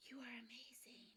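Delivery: hushed, soft whisper, very quiet. Quoting a movie scene where a character whispers in her ear: imitating a whisper. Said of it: "he's whispering in her ear".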